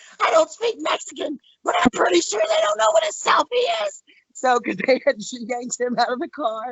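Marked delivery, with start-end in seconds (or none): 0.2-4.0 very high-pitched screaming outcry. Retelling what a friend screamed out after being yanked from the car, imitating someone screaming. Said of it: "my friend screams out".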